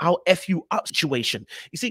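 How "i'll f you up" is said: ordinary talk, nothing marked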